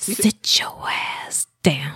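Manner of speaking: put-on scolding tone. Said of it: "Said just like that, too".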